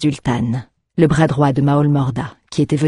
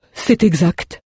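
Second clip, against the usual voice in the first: trembling, tremulous, quivering voice; 4 semitones higher than usual. A butcher confirms what he is told, in a trembling voice. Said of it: "répondit le boucher d'une voix tremblotante".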